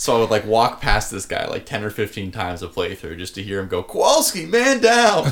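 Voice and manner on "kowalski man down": very high, quavering, trembling distressed call. Quoting a game character's line he loved hearing, imitating a trembling voice. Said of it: "There's like a little tremble in his voice".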